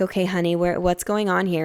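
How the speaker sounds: ordinary talk, nothing marked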